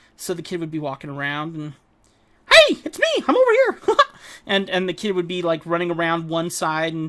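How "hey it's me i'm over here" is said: piped up, high and loud. Retelling confusing a kid by calling out to him in a Mickey Mouse voice. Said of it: "I would basically do my Mickey Mouse voice".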